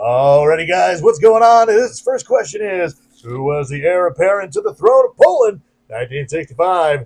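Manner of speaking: loud strip-club announcer MC patter. Reading out a quiz question to the crowd, in a stripper announcer voice. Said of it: "the do the stripper announcer voice".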